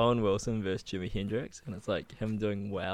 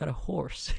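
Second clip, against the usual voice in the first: spot-on impression, ASMR style, pitched higher; 7 semitones higher than usual. Retelling an ASMR video of an Owen Wilson impersonation: Owen Wilson impression. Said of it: "a spot on Owen Wilson impersonation".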